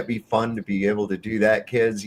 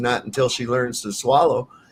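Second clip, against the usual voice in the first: usual speaking voice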